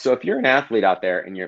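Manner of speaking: voice cracking mid-sentence with swooping pitch. Speaker addressing athletes listening, voice cracking mid-sentence. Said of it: "my voice just cracked".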